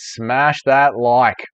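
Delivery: very slow, drawn-out, slowed-down delivery. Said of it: "Smash that like, mate".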